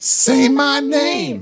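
very high, shrill, demanding wrestler-style yell. Retelling a wrestler's taunt during a match: imitating a wrestler yelling.

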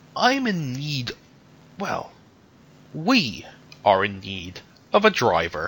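pained delivery, speaking through a wince of pain. A woman speaks to an old man, wincing in pain. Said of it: "She winces slightly in pain".

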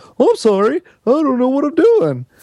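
very high, dithering, bumbling buffoon voice. Describing the voices of different guys, imitating the bumbling buffoon. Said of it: "the bumbling buffoon who's like".

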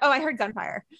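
mock-unfazed, casual delivery. Imitating how an ER doctor mentioned gunfire, imitating a casual tone. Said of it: "just the way he said it so casually, completely unfazed".

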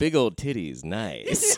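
lingering sing-song voice, slow, swooping, drawn out. Imagining a listener's reaction to a story: Howard Stern impression. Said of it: "Howard Stern hearing that story, being like".

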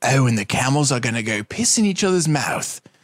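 sultry British nature-documentary narrator voice. Recalling the David Attenborough films teachers showed instead of teaching biology, sultry David Attenborough voice. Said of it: "the dude with the sultry, like, British voice".

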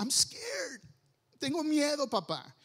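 put-on high, swooping, weepy little boy pleading through tears. Retelling how the son started crying at bedtime: imitating a crying son. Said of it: "Me dice".

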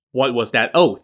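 ordinary delivery

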